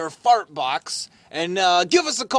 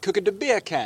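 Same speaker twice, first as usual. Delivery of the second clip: put-on Jamaican accent. Explaining how he gets into his Jamaican, the speaker demonstrates: Jamaican accent. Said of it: "That's how I get into my Jamaican".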